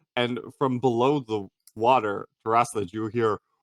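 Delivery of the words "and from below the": usual speaking voice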